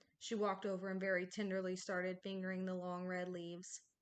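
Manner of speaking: ordinary talk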